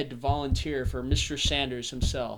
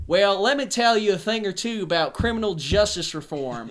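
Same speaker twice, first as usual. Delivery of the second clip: put-on Southern accent, pitched up; 6 semitones higher than usual. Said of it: "People talk like this".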